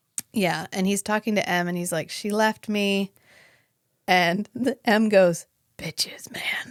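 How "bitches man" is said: breathy, hushed, whispery undead zombie voice. Retelling a film scene where M answers another character: M's whispery zombie voice. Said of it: "it's like whispery zombie voice".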